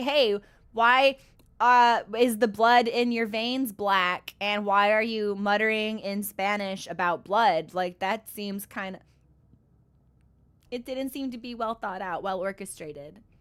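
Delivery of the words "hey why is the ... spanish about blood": ordinary talk, nothing marked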